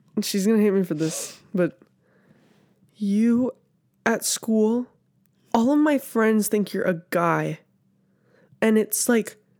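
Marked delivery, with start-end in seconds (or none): 1.6-7.6 slow tone with words drawn out. Retelling what a sister said at home, imitating her sister's tone. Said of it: "that was actually a really good impression".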